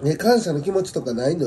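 ordinary delivery

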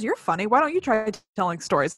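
plain

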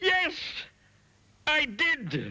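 shrill, swooping, very high, full-volume shout. Narrator reading a character answering a shopkeeper, shouting at the top of his voice. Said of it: "shouted Mr. Noisy at the very, very top of his voice".

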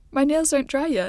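sulky pouting voice. A woman, asked by a man to send texts for him, answers pouting. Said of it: "She pouted".

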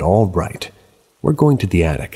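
ordinary talk

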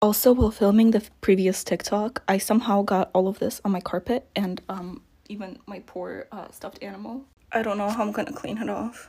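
speaking in a whisper. Filming a TikTok while everyone else is asleep, whispering. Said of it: "I have to whisper because everyone's asleep".

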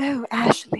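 British-style delivery. Retelling how a patron said a name: imitating a british accent. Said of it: "she did it in the accent".

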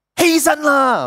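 loud high-pitched call.

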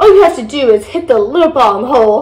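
ordinary delivery, nothing marked

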